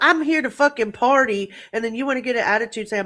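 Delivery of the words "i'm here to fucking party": high, rowdy yell. Retelling what someone yelled on arriving: imitating someone yelling.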